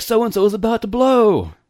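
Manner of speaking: belted, very high, loud, hyped play-by-play announcer voice. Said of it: "the announcer".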